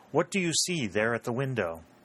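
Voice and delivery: ordinary talk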